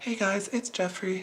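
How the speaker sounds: quiet, intimate close-mic voice. Showing the voice used when recording a whistlegraph video: whistlegraph video intro voice. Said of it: "a specific kind of like voice that I do".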